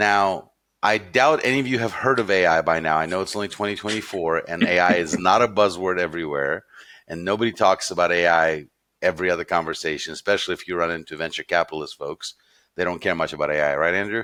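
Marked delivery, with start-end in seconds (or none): none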